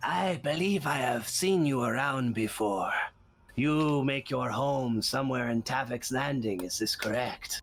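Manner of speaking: odd, weird, scratchy rasping character voice.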